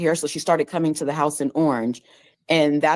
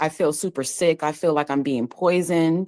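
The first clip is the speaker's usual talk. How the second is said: ordinary delivery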